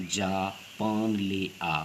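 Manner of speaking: slow Japan, pause, then ले आ. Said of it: "Japan प्रवाह और थोड़ा रुक कर ले आ बोला जाता है".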